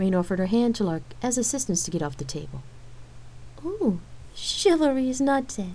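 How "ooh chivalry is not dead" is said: playful teasing through laughter, high and swooping. A woman offered a hand down from the table, to her partner: teasing with a laugh. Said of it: "Lark teased with a laugh".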